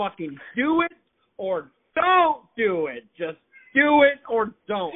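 shouting. Speaker vents to a friend about the weather in Indiana, yelling. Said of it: "you're yelling".

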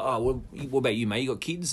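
ordinary delivery

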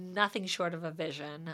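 ordinary delivery

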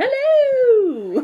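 very high-pitched, long drawn-out "hello". Showing how they greet people, in a Mrs. Doubtfire voice. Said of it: "I usually greet people like Mrs. Doubtfire too".

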